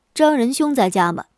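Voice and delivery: ordinary talk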